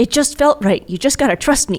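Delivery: high cartoon voice. A player's character tells her to trust him, in Bubbles voice. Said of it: "In Bubbles' voice".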